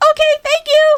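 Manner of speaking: squeaky-high stunned voice. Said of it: "my voice went up really".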